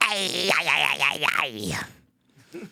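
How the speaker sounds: very slow demon-woman drone, every syllable dragged. Doing a joke impression as a ceiling-crawling demon: Nancy Pelosi as a demon. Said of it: "here's my impression of Nancy Pelosi".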